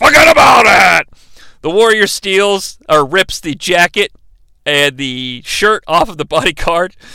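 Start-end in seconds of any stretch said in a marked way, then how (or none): 0.0-1.1 ragged, high, raspy shout. Retelling a wrestling broadcast, imitating Vince yelling. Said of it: "Vince yells".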